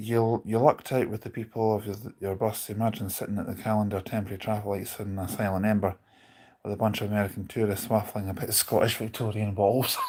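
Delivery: ordinary delivery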